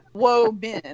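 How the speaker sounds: "whoa-men" split apart and drawn out, mock. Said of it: "then he was going".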